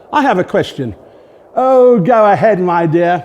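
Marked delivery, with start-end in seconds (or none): 1.5-3.2 very slow, raised, condescending and patronising tone. A narrator reads Howard answering a woman in the stalls, in his most patronising tone. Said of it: "said Howard in his most patronising tone".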